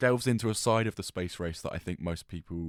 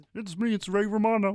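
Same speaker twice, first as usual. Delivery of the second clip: put-on small-mouth voice, higher and louder; 13 semitones higher, 5 dB louder than usual. Retrying the impression with a really small mouth: Ray Romano impression, small mouth. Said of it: "You gotta talk with a really small mouth".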